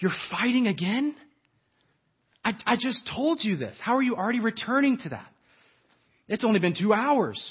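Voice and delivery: fed-up, exasperated tone. Recalling their childhood, the speaker quotes their parents, mock-exasperated parent. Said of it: "your parents' exasperated tone".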